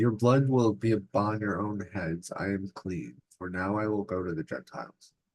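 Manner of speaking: usual speaking voice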